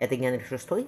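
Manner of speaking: ordinary delivery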